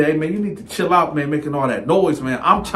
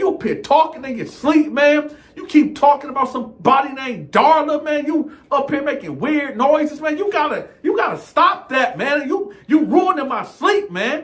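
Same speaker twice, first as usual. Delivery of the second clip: voice pushed up to its higher register; 10 semitones higher than usual. Retelling what he said to another man, in a raised voice. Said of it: "my voice is real elevated. He done took me to my higher voice".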